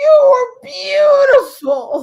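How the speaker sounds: shrill, very high-pitched, loud voice. Retelling a phone call after a tv appearance, imitating mom. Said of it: "And she just goes".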